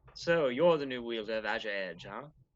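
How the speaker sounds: voice done as a woman. Game master voicing Patience speaking in a player's head, Patience, a woman's voice. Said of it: "you suddenly hear a woman's voice in your head".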